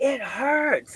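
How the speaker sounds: very high-pitched, strained, pained yell. Retelling a woman halfway up a rope saying it hurts, imitating her yell. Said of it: "she just like yells".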